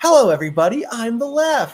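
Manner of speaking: very high, loud, innocent and naive put-on voice. Describing the leftist character they made: imitating a very naive character. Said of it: "the most, like, naive".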